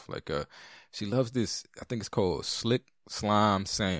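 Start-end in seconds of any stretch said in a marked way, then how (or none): 2.4-4.0 slow, careful, drawn out word by word. Naming something she loves after failing to say it all weekend, 'Slick Slime Sam' said slowly. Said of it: "I had to say it slowly".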